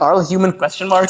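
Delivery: ordinary talk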